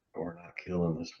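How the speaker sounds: hushed whisper. A player says what their character whispers to Adrian, whispering. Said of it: "I'm gonna whisper to Adrian".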